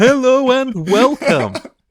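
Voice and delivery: very high, loud, put-on podcast broadcaster voice. Imitating two podcast hosts heard in an asylum hall: put-on voice of asylum patients greeting. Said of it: "I like that you chose a level for that voice".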